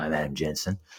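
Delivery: put-on, very gravelly voice. Talking about a voice actor's work, gravelly Elias Toufexis impression. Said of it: "very gravelly voice. He's like, ... It's pretty good impersonation".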